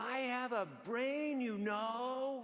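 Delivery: acted blurted shout, high, "know" held long. Speaker retelling what he shouted about the cable car, retelling a shout. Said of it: "And I shout".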